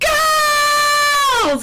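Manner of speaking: high, loud crowd-style shout.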